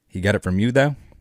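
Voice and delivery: ordinary talk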